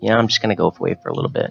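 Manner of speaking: acted, breezy offhand tone, played way down, swooping pitch. Retelling how a man talked about going into space: imitating someone downplaying. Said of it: "downplayed it very much when he was like".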